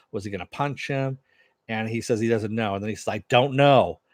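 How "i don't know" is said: super-powered voice, really loud booming shout. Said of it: "really loud, using the super voice".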